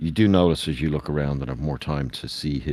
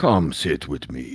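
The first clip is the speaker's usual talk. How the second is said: rough, gravelly, rumbling voice of a huge warrior. A narrator voices a giant character inviting the listeners over, in a gravelly, rumbly voice. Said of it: "he says in his gravelly, rumbly voice".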